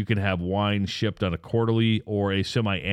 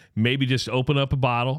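ordinary talk, nothing marked

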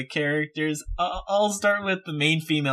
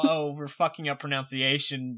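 ordinary delivery

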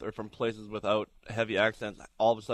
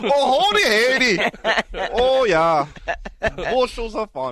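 put-on Canadian accent; 12 semitones higher, 11 dB louder than usual. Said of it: "That's what you guys sound like to me".

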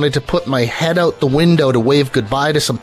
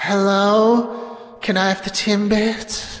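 put-on timid, eerie, high possessed-child voice, drawn-out hello; 6 semitones higher, 4 dB quieter than usual. Suggesting a prank at a drive-thru speaker, the speaker orders in a meek, horrifying voice. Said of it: "you got to say it really meekly because then it's horrifying".

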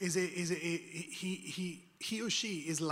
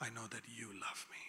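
whispering, lower and quieter; 8 semitones lower, 12 dB quieter than usual. Showing the prayer whispered in the midst of crisis: whisper. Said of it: "what am I whispering?".

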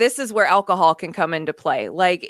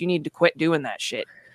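put-on motherly voice, quieter; 3 semitones lower, 4 dB quieter than usual. Speaker addressing the listener, giving them the mom voice. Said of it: "I'm going to give you the mom voice".

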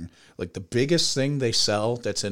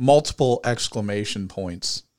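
ordinary delivery

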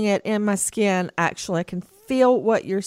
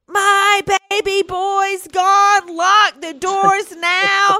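very high, drawn-out hysterical siren-like wail; 11 semitones higher, 5 dB louder than usual. Retelling losing a child in a store: retelling own screaming. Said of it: "I started screaming".

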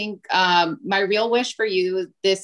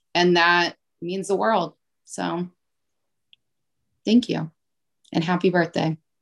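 choked-up voice catching with emotion. Thanking someone and wishing them happy birthday: choked up. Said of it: "I got a little choked up".

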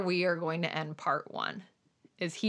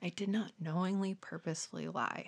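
whispered, quieter; 9 dB quieter than usual. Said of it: "he starts whispering to himself".

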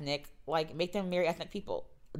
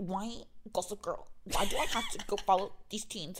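puppet-like teacher voice; 3 semitones higher than usual. Complaining about a reboot's teacher, the speaker imitates her: Muppet-like teacher voice. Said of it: "She literally talks like a Muppet".

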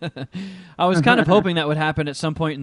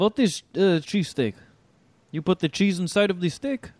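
put-on convincing Russian-accented English; 4 semitones higher than usual. Joking about buying off Russians with cheesesteaks, speaker plays a Russian, Russian accent. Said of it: "you have a good Russian accent".

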